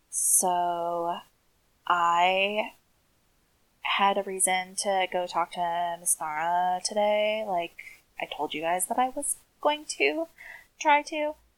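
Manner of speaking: dropped voice, drawn-out "so". Playing a character reporting back to the group, in a lowered voice. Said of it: "I will lower my voice".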